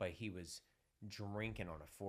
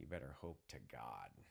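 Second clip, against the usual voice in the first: whispering, lower and quieter; 7 semitones lower, 5 dB quieter than usual. Retelling what a cop said after a needle stuck him: imitating a cop's whisper. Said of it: "whispers in my ear".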